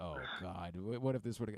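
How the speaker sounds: soft, angsty, anxious, worried fretting. Acting out the small angsty part of the fans: imitating angsty worry. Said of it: "that small kinda angsty part of us".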